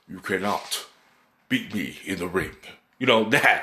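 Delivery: serious final-boss movie voice. Showing how Loki talks about the ring, like a movie final boss. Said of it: "He talks like a final boss in a movie".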